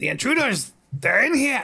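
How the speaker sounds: very high-pitched snake-man creature yell. Voicing the snake men a listener's monk overhears, in a yelling snake-man voice. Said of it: "These snake men voices, ... they're yelling".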